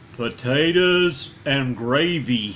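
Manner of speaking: slow, low, drawn-out, unhurried talking voice. Reading a story aloud, voice a character's reply in a slow talking voice. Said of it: "he said in his slow talking voice".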